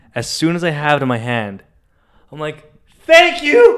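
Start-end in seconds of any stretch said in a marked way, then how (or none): 3.0-3.8 shrill, very high, loud, overjoyed delighted burst. Retelling catching a golfer's ball: retelling own happy thanks. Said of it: "I'm so happy".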